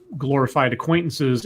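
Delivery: ordinary delivery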